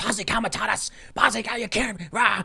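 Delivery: mock frantic, panicked, high-pitched screeching rant. Retelling how a panicking man screeched at enlisted kids; retelling a screech. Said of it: "he starts screeching Posse Comitatus".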